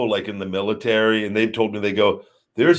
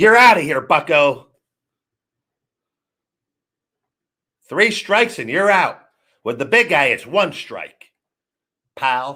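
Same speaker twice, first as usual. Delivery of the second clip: uptight, pitched-up, tight voice; 5 semitones higher than usual. Speaker kicks a troublemaker out of the community, in his whitey tighty voice.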